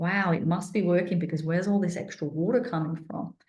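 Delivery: ordinary delivery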